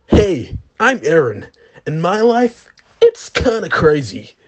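very low-pitched anime-dub style voice. Doing anime dub impressions with friends: Eren Yeager dub impression. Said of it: "Eren Yeager!".

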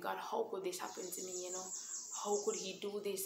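put-on loud anguished crying out. Recalling being let down by him, the speaker retells crying out to God. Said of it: "I'm crying out to God".

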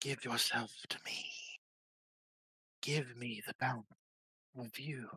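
low, eerie, creepy coaxing whisper. A game master voices a whisper right behind a player's ear: creepy coaxing whisper. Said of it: "but there is a whisper at the back of your head. It feels like fingers are crawling across the back of your skull. And there's just this whisper right behind your ear where you hear".

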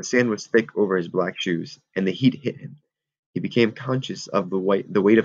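plain

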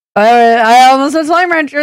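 emphasis on "slime". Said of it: "There was some hesitation".

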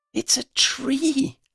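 excited whisper. Narrating a novel, giving Freddy's line in an excited whisper. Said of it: "Freddy said in an excited whisper".

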